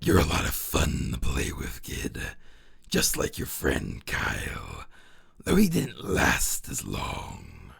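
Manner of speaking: frightening, spooky put-on voice. Telling a story, the narrator voices a mysterious figure addressing a kid in a scary voice. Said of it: "gotta do the scary, the scary voice".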